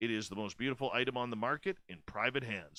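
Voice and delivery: ordinary talk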